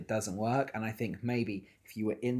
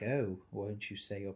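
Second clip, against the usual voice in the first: creepy, unsettling preacher voice, cut off midword; 5 dB quieter than usual. Imitating how the creepy Reverend speaks to a child: imitating the creepy Reverend. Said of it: "but it's the way he's like".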